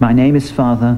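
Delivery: ordinary talk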